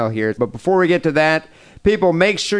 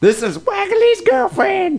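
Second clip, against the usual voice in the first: very high, fake, put-on girl voice.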